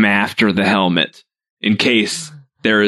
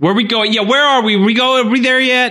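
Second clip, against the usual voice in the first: yelling, much higher. Characters falling behind their group, yelling. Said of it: "start yelling this".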